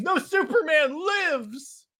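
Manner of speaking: mock scream, high, slow, drawn out.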